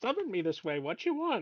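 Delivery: put-on backwards-talking sage voice. Voicing a raven that answers a summons: Yoda voice. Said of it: "why is my raven suddenly Yoda?".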